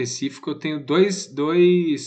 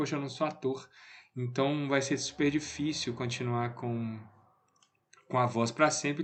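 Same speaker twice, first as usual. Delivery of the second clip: ordinary talk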